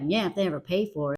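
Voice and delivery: mumbled under-breath remark. Retelling a mom's bitter remarks about men: imitating muttering under breath. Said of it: "under her breath remarks".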